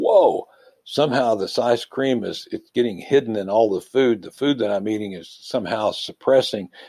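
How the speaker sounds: ordinary talk, nothing marked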